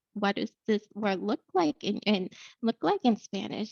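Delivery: ordinary talk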